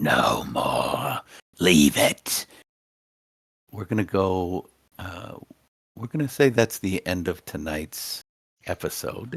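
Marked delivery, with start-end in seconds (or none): 0.0-2.5 very low, slow, deep, raspy, gravelly smoker's voice. Playing a character during a group story episode, gravelly smoker's voice. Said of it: "this gravelly smoker's voice ring out".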